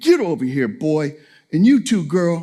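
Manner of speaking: stern, serious, no-nonsense adult dad voice. A father retells calling his kids over to show he was serious, retold serious adult voice. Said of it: "I had to use my real kind of adult voice to kind of make them know".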